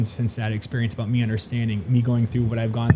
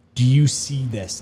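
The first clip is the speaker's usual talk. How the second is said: put-on big, booming voice. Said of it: "this big voice came over".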